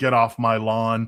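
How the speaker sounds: put-on grumpy, cantankerous old man voice. Describing how the other side comes across, imitating a grumpy old man. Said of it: "a cantankerous, grumpy old man saying".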